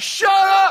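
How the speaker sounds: mock shrill, very high, loud yell. Retelling a plane landing, the speaker voices the stewardess yelling at a passenger. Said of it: "She's yelling at him".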